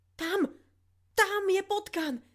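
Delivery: very high, loud, fearful shriek. [name] cries out to Lily, hopping about in fear; shrieking. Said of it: "jačala".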